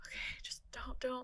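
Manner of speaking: very soft, hushed whisper. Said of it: "and I was like".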